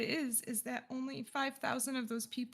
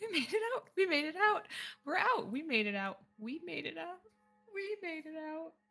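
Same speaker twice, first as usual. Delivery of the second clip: high, uncontrolled laughing and sobbing together; 5 semitones higher than usual. Walking away into the wilds, the speaker acts out Lyra: Lyra laughing and crying hysterically. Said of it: "starts laughing hysterically and then starts crying".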